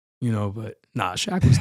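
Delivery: ordinary talk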